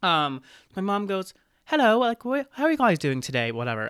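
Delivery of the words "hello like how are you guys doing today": bad fake British accent, higher and faster. Retelling her mom greeting a family on a raft ride, awful British accent. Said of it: "I'm awful accent".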